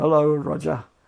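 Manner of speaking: low-key, gentle, mild, understated voice. Retelling a radio call-in, the last caller: imitating a caller speaking very quietly. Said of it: "very quietly goes".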